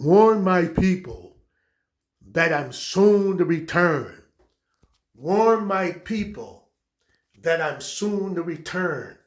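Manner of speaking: booming, drawn out slowly, word by word. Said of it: "with his deep voice".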